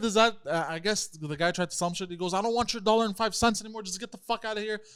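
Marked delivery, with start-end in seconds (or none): 2.3-4.8 heated, high-pitched mild half-yell. Retelling a store owner's fight with a man: imitating someone screaming. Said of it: "they're screaming at each other".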